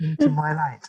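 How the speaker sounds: mock soft-spoken voice. Imitating how an optician speaks during an eye exam: very soft voice. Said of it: "speak in that very soft voice".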